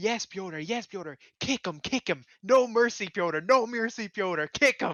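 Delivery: wild, loud, high-pitched, drawn-out screaming. Retelling a coach urging a fighter on in corner footage: imitating someone screaming. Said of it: "Your man just starts screaming".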